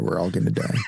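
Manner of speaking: put-on whisper. Retelling what they whispered to their newborn children: imitating a whisper. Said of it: "I whispered in their ear".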